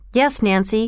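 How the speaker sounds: ordinary delivery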